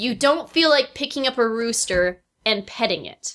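ordinary talk

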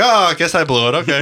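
put-on apologetic, meek, easygoing Canadian accent. Imitating a friend who is apologizing meekly: Dan with a Canadian vibe. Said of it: "he's kinda has that".

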